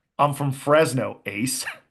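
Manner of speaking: put-on slow, very strong American accent. Quoting a prisoner answering another prisoner who judges his looks, very American accent. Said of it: "in the most American of accents".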